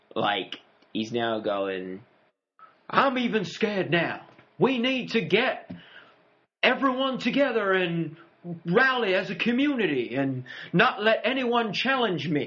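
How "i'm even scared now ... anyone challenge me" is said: high, put-on politician voice, rallying stump-speech delivery. Discussing a show, acting out the governor rallying his followers: imitating the governor's speech voice. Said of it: "Are you doing the speech on fear in a George Bush voice".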